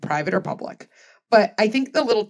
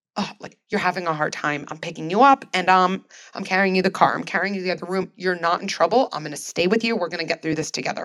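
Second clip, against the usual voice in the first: play-acted firm, grounded, sturdy, steady calm voice. A parent shows how they talk while picking up their struggling child: sturdy voice. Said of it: "I'd say something in this sturdy voice".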